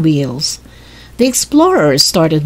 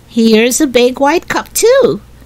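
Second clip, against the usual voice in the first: cheerful, pleased, happy voice, pitched up; 6 semitones higher than usual. Violet, searching the dump with Jessie, finds a big cup and says it happily. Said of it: "she said happily".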